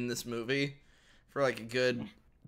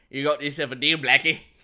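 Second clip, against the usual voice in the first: booming, very loud, put-on cartoon Australian accent; 9 dB louder than usual. Among friends, doing the Australian impression from The Simpsons. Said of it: "Australian impression from The Simpsons".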